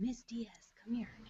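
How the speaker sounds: soft, hushed whisper, close in the ear. Retelling Julian calling the speaker over: imitating Julian's whisper. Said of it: "And he's whispering".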